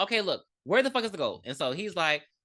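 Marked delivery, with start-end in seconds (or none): none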